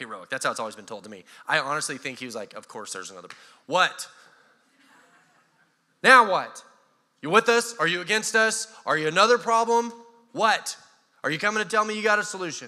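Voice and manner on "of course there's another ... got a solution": raised, mock needling, sarcastic voice. Retelling a leader's weary reply to a stranger: imitating Joshua, sarcastic. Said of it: "a little hint of sarcasm in his voice".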